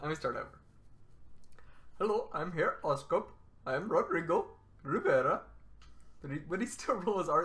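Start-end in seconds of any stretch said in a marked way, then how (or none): 2.0-5.4 put-on Indian accent, much slower. Starting his bit over, the speaker voices the new arrival: attempted indian accent. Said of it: "I was gonna try to do an Indian accent".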